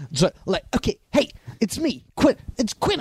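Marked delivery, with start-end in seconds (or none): 1.1-3.0 very high-pitched voice with big energy. Imitating Quentin Tarantino pitching the film to funders: Quentin Tarantino impression. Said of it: "I know this is not how my voice sounds, but it's the energy".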